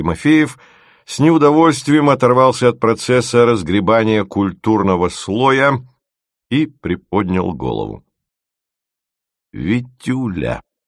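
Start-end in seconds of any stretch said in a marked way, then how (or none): 9.5-10.6 gently coaxing, tender, softened. The boss calls out to the trainee Timofeev again, switching to a more tender intonation. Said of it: "перешла на более нежные интонации".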